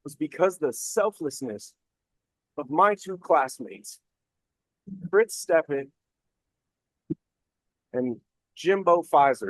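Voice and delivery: choked-up, emotional voice. Speaker telling about failing land nav the first day, getting emotional. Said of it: "why I'm getting emotional right now".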